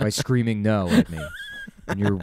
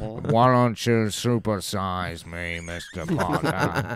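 slow, strange, sly mock wizard voice, dragged out. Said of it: "Great bit, great riff".

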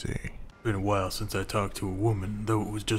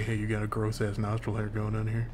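usual speaking voice

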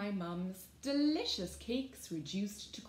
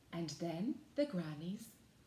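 plain reading voice

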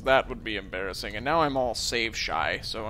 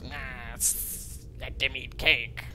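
voice of a spider. Act out how she says it, not just like Marie Antoinette, but talking like a spider. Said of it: "she says it like a spider".

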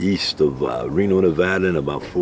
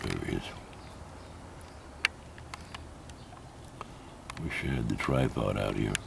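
hushed whisper, much quieter; 10 semitones lower, 16 dB quieter than usual. Filming a fly up close, the speaker talks to viewers whispering. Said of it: "I don't know why I'm whispering".

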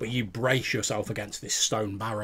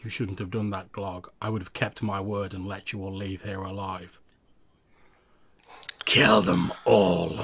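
cold, cruel, drained, pitiless, emotionless voice; 2 semitones lower, 3 dB louder than usual. Telling the scene, the speaker voices Rufus speaking to Glog, in Rufus's cold, cruel voice. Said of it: "a sort of cold, cruel tone creeping into it as that are all the emotions drained out of his voice".

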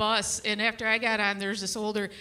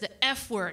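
normal talking voice

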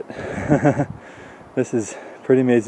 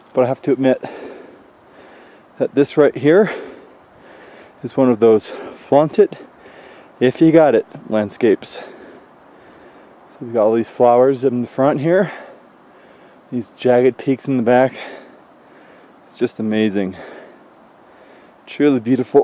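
a little out of breath. Panning over the landscape by a trail, a little out of breath. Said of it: "I am a little bit out of breath right now".

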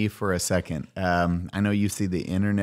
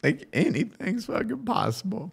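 tearful, very high, soft crying; 12 semitones higher, 5 dB quieter than usual. Telling an audience they appreciate and love them, crying. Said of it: "I'm sorry I'm crying right now".

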